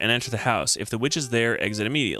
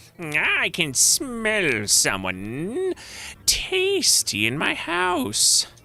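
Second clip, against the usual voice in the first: very high, swooping, squeaky witch voice; 11 semitones higher than usual. Narrator reads the witch's line, heard off in the distance, high squeaky witch voice. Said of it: "a high, squeaky voice say".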